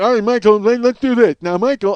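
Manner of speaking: bad put-on deaf-man voice. Act out Ferrigno talking to Michael, in Ferrigno's bad deaf voice. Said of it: "he's got that bad voice. So he's like".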